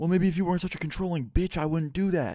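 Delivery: heated, sharp angry voice. Retelling a couple's argument at a party, voicing the man: retelling a raised voice. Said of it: "they start raising their voices".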